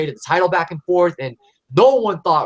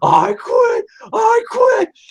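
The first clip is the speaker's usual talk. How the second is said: very high, slow, loud, stretched-out raised cry; 5 dB louder than usual. Retelling the end of a wrestling match, imitating Mick Foley saying I quit. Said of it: "I'm gonna try to do the voice".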